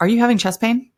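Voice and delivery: very sharp, dead-serious. Retelling the sonogram lady's sudden question: imitating a very sharp, serious question. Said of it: "Very, very sharply, very seriously".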